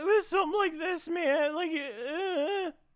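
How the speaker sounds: feeble, very high, slow, drawn-out voice. Imitating the earlier voice another player used: imitating a weak voice. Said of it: "it wasn't Larry, but it was, like, just weak".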